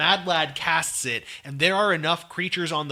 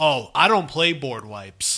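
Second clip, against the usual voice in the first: mock dry, completely serious deadpan delivery. Recounting how someone answered the group's joke, retelling a deadpan reply. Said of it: "looks us deadpan in the eyes and he says".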